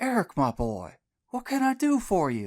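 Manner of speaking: raspy, rasping voice. Reading a story where a brother's old friend answers a call: rasped into the phone. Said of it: "rasped into the phone".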